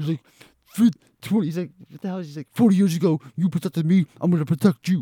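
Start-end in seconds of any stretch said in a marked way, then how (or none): 2.5-5.0 put-on heavy Brooklyn accent, laid on thick. Describing a movie scene where Tommy Doyle reunites with Lori, in Tommy Doyle's thick Brooklyn accent. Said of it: "He's talking like he's got this thick, like, Brooklyn accent".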